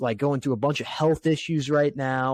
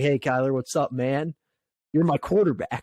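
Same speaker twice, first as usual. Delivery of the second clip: cheesy, buddy-buddy tone laid on thick. Retelling what the coach said to his quarterback: imitating Jonathan Gannon being cheesy. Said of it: "so cheesy".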